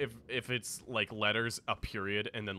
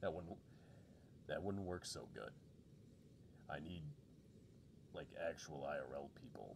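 voice lower and quieter than usual; 5 semitones lower, 15 dB quieter than usual. Reading a story aloud, the speaker voices the chief: chief impression. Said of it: "I'll do my best chief impression".

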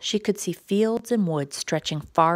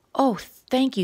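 high, squeaky little voice; 5 semitones higher than usual. Lettice answers the girl who offers to fly her back, squeaking. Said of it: "squeaked Lettice".

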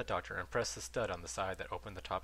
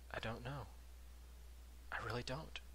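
hushed, very soft voice, barely above a whisper; 3 semitones higher, 9 dB quieter than usual. A doctor, asked if everything is all right, replies barely above a whisper. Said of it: "his voice barely above a whisper".

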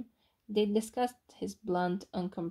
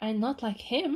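sharp, snapping voice; 4 semitones higher, 3 dB louder than usual. Narrator voicing a man answering a woman's teasing about his old mentor, sharp retort. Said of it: "he retorted more sharply than Olive had come to expect".

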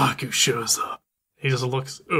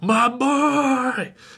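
put-on wild, feral, very high cry, boy drawn out; 11 semitones higher, 3 dB louder than usual. Retelling a movie scene where a father runs in: imitating a feral yell. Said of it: "goes feral and just like".

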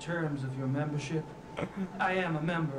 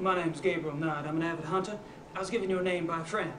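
worst, bad fake put-on Texas accent; 2 semitones higher than usual. Role-playing an avid hunter introducing himself to a taxidermist: bad texas accent. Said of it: "That is the worst Texas accent ever".

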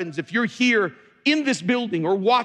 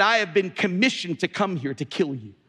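put-on demonic voice; 3 semitones lower than usual. Speaker telling folks what a man said to him, in a demonic voice. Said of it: "this demonic voice came out".

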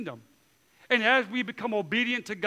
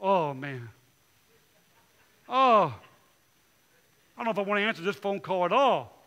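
mock unwilling, heavy-hearted, dreading, hesitant tone; 2 semitones lower than usual. Acting out own reaction to a troublesome caller: imitating reluctant dread. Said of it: "it's like a knife being stabbed in your belly".

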